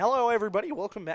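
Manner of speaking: loud voice with a voice crack. A baseball broadcaster welcomes everybody back with a voice crack. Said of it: "started off with a voice crack".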